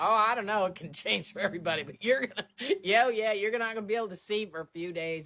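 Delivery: very loud, high-pitched, chuckling, offhand delivery. Retelling a surgeon's answer on recovery time, imitating chuckling amusement. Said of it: "he got such a tickle".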